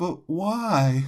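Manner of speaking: high, lingering tone, "why" drawn out. Retelling what a woman said after being refused: imitating a quiet voice. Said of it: "I just hear a quiet".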